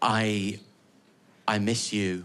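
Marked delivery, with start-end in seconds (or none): 1.5-2.2 fake sincerity, lower pitch and quieter. Telling another person something, mocking it: insincere delivery. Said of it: "amazing how insincere it is when I do it like this".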